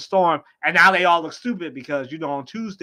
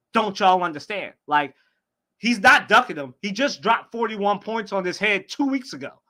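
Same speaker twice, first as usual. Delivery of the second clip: ordinary talk, nothing marked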